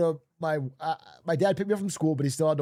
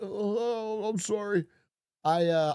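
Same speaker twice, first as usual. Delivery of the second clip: mock near-tears child voice, slower pace; 6 semitones higher than usual. Retelling a young kid being yelled at, imitating someone near tears. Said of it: "he's just like about to break down".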